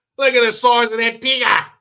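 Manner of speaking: shouted Australian accent. Demonstrating a line he used to yell at work, yelled australian accent. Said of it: "I used to yell that shit at work".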